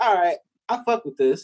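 normal talking voice

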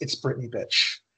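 hushed, quiet, breathy whisper, barely voiced. Retelling a player's line as he activates a spear mid-fight, retelling a quiet whisper. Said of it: "whispered quietly".

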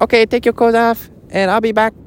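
muddled, put-on blend of Chinese and Mexican accents. Imitating a woman's words, the speaker tries a mixed Chinese-Mexican accent. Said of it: "That's a Mechanese, Chinese and Mexican".

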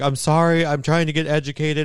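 mock, high, teary, near-crying apologetic tone. Retelling an apology TikTok after angry comments: imitating someone almost crying. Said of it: "she was, like, almost crying".

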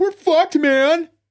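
loud, way-up-high outburst. Quoting a line from Aliens after the other speaker, Bill Paxton voice. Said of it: "in that voice".

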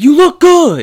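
put-on shrill, high, loud yell that sounds furious. Retelling a viral video where a guy compliments his friend: imitating an angry-sounding compliment. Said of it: "he sounds like he's angry, but he's being, like, nice".

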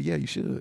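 soft, hushed whisper. Retelling whispering to a shopper as his conscience: imitating own past whisper. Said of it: "and I whisper".

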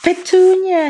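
very high, shrill, loud gasped cry. Reading a story, Uncle Vernon stares at a letter and says Petunia's name, gasping. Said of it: "he gasped".

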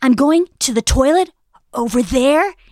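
loud, hammy, overacted, drawn-out delivery. Mocking an actress who amps up every line: Sarah Jessica Parker overacting. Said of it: "she just amps it up too much".

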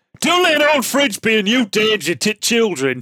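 public-service announcement voiceover delivery. Reading a public-information film script as the voiceover: Sean Bean voiceover. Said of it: "shall I do it as Sean Bean?".

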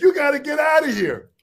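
mock high, yelling security guard voice. Retelling what a security guard said: imitating a guard yelling. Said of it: "started yelling at me".

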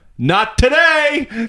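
high, slow obnoxious tone. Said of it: "I was so obnoxious about it".

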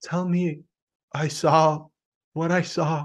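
very slow, high, flat, lifeless monotone. Mocking an actress's line delivery in a movie scene: monotone Liv Tyler imitation. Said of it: "The way she delivers it, so monotone".

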